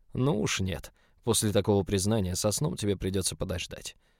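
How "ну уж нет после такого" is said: ordinary delivery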